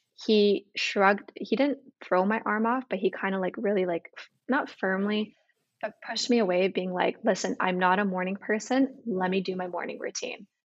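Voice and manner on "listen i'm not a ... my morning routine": put-on firm, resolute voice. Retelling how he pushed away a hug in the morning: imitating a firm voice. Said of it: "he said in such a firm voice".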